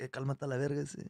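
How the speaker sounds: soft, street-tough gangster-style Spanish. Speaker showing how they talk to themselves before getting on stage, like a gangster in spanish. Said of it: "I talk to myself like a gangster in Spanish".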